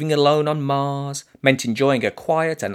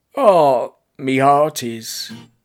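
lackluster, unenthusiastic, half-hearted delivery; 4 dB louder than usual. Narrator reads a talking pair of pants' reply, lackluster. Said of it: "adding a lackluster".

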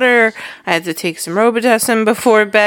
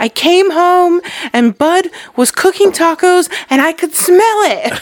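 mock thrilled, very high-pitched excited gush; 10 semitones higher than usual. Retelling a voice memo someone sent: imitating Heather's excited voice. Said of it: "excitement in her voice".

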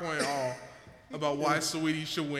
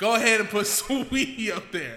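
bold, cocky, energetic, swaggering bravado; 6 semitones higher, 6 dB louder than usual. Retelling what another speaker said, imitating someone with bravado. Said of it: "with so much energy and bravado".

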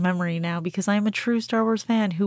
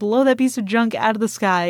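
plain

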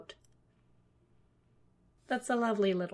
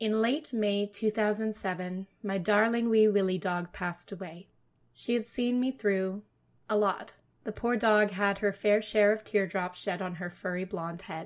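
ordinary talk

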